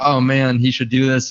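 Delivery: ordinary talk, nothing marked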